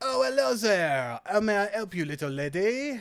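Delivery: high-pitched fake put-on French accent. Voicing the mustached man a player approaches as he answers, in a put-on accent. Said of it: "I will do this accent for as long".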